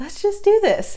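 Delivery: excited cheer.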